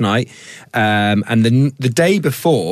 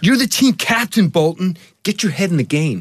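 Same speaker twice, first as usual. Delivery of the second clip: acted, pitched-up put-on American accent; 7 semitones higher than usual. Asked to give a line in an American accent, the speaker performs one: American accent. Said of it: "give us your American accent".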